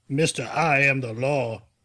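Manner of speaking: deliberately bad, slow, drawn-out movie-line delivery. Quoting a movie line as Sylvester Stallone: bad Sylvester Stallone impression. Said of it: "that's a bad Stallone".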